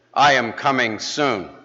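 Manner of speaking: strong, firm tone. Telling of a man getting no reaction from a congregation, retelling a stronger, firmer voice. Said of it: "in a stronger and firmer voice".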